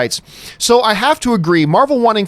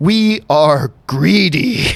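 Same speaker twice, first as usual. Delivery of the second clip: voice of an alien symbiote creature; 2 semitones lower than usual. Reading a viewer's comment aloud about Sony: Venom voice. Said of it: "in the Venom's voice".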